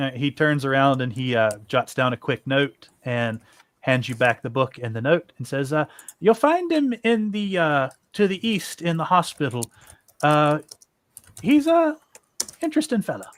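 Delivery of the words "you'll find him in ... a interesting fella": put-on weird half-Irish accent, pitched up. Narrating a game, voicing a character who hands the player a note, in a weird almost irish accent. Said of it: "I don't know why I did a weird, almost Irish accent for him".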